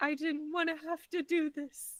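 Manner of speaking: sorrowful, hesitant voice. A player in a dice game speaks as the character Beef, very sadly. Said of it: "Beef just very sadly goes".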